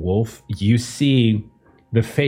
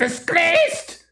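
shrieking, squawking bird-woman voice, higher. Voicing a raven woman screaming down at the group: squawking, screaming raven woman. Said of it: "squawk and scream and squawk and scream".

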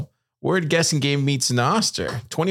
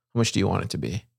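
deep, secretive hush pitched very low; 8 semitones lower, 4 dB quieter than usual. Telling a joke, the lawyer dims the lights and asks in a hushed voice. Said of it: "asks in a hushed voice".

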